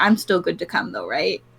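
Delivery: whispered speech. Asking the bar owner in character if still welcome: whispering. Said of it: "whispering the last part".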